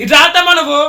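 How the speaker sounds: loud, high-pitched shouting. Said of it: "నువ్వెందుకు అరుస్తున్నావు".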